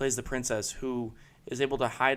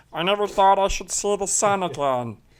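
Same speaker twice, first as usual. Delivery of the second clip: very loud, high-pitched frog voice; 8 semitones higher, 9 dB louder than usual. Recalling quotes he liked, the speaker repeats a line in the frog voice. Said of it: "the frog voice".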